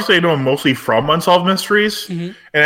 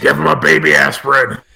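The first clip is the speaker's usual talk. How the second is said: menacing, rough, creaky tiger-like growl; 2 semitones lower than usual. Recounting a story, the speaker quotes what he said before striking, retelling a growl. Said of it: "He growled".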